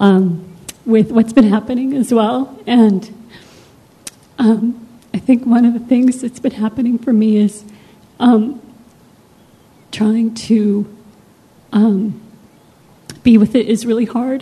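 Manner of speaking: choked-up voice, fighting back tears. Sharing how hard it has been to be with recent events, on the verge of tears. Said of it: "I'm totally gonna cry".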